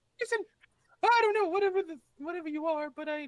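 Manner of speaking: very high, very loud squeaky voice. Pleading in character with a creature, slipping into Mickey voice. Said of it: "I'm too Mickey".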